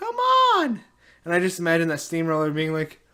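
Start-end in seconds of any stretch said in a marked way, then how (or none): 0.0-0.8 very high-pitched, urging shout. Retelling a scene where a character yells at a steamroller: imitating someone yelling.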